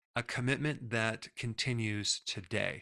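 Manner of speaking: ordinary delivery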